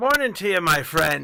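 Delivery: loud shouting. A player's character walks up to a man and greets him, bellowing. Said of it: "just kind of bellow it out".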